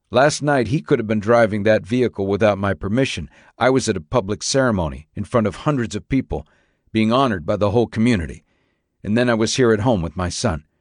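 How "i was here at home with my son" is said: ordinary delivery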